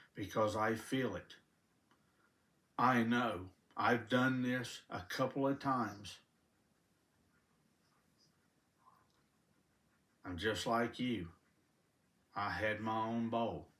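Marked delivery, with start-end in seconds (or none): 0.2-11.3 fighting back tears. Speaking of what God gave them, the speaker addresses listeners, holding back tears. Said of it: "I'm holding back tears now".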